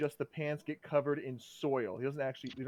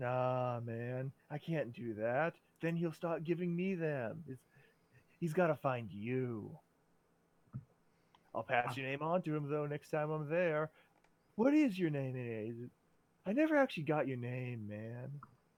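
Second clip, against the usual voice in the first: slightly stoned-sounding voice. Playing a character who is asked for directions, sounding a little high. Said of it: "He's a little high right now. / He's a little high right now. / Yeah, I mean other toughs, but no, man. This is our turf. Ain't no one step on our turf. Man, these butterflies are really neat. / He's".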